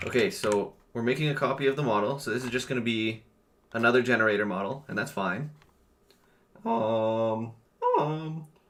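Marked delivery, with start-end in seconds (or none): 6.6-8.4 voice cracking mid-sound on um. Mid-explanation, the speaker's voice cracks on a filler. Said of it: "voice crack".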